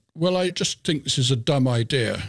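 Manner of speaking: ordinary talk, nothing marked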